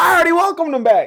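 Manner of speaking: very high, very loud, shrill yelling. As the show restarts, one host cuts in on the other's welcome, yelling. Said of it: "quit yelling".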